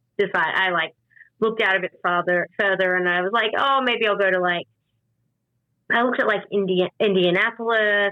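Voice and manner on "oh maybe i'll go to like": ordinary talk, nothing marked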